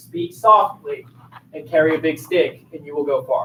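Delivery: ordinary delivery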